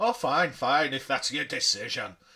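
attempted Scottish accent. Retelling how a man judged your cooking, in an attempted Scottish accent. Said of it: "I was going to do a Scottish accent then".

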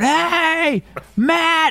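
put-on very high yell with long drawn-out "hey". Retelling calling the niece's dad in from the bathroom, retold yelling. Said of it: "And I start yelling".

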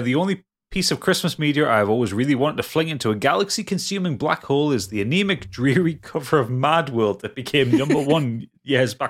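plain

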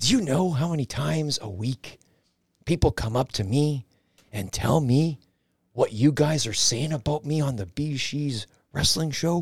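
mock-whispered promo-style voice, quiet and hushed. Retelling what a man who cuts promos said to him, imitating his quiet whisper. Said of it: "In that quiet whisper that he does".

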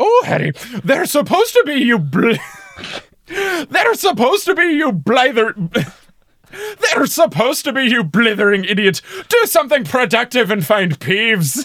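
very high, sharp snapping scolding tone. Retelling an audiobook scene, McGonagall snapping back: McGonagall snapping back. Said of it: "McGonagall snaps back instantly with".

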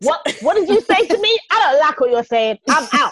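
loud high shout. Acting out her exit from the situation, mock shouting. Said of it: "You don't have to shout".

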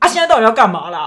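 loud, harsh and fierce delivery. Retelling what a scooter shop worker asked: imitating a fierce, harsh tone. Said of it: "就很凶".

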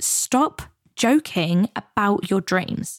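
really serious, slow voice. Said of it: "Mel got really serious".

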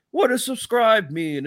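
put-on very high-pitched old-timer, old man voice. Imitating Scott doing his usual old man impression: Scott's old man voice. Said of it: "old man impression".

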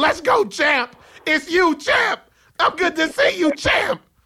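very high, hyped-up voice, pitched way up. Retelling a boxer running up and greeting him: Shannon Briggs impression. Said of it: "he ran up on me, and he said".

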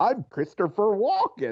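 puppet-like voice. Introducing oneself in a Muppet-like Christopher Walken impression. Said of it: "like a Muppet version of Christopher Walken".

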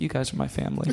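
muttered under breath. Retelling a man talking to two of his workers in the car, muttered under his breath. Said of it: "he mutters under his breath".

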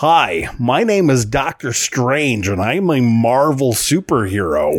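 slightly off put-on American accent. Imitating an actor's almost-right attempt at an American accent: Benedict Cumberbatch's slightly off American accent. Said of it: "someone like Benedict Cumberbatch trying to do an American accent".

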